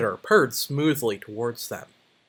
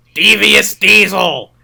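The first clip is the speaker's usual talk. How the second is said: very loud, high, creaky, oily, rough villain voice; 7 semitones higher, 13 dB louder than usual. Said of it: "committing to that voice".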